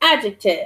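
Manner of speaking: "adjectives" with stress and high start on "ad". Modelling pronunciation after a student's repetition: stress on ad in adjectives. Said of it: "You start up high".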